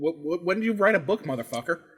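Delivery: ordinary delivery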